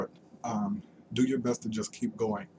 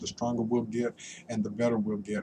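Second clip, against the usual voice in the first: plain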